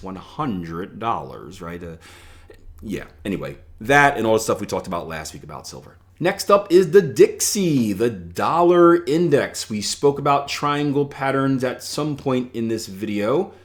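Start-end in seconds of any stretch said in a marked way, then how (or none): 0.0-1.6 soft, hushed, low-key villain voice. Naming a price level in a market video; Doctor Evil voice. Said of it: "Doctor Evil voice".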